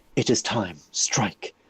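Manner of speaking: put-on strange elven whisper. Describing an axe that lights up, the speaker voices its strange elven whisper. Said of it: "It is just like whispers in your ear".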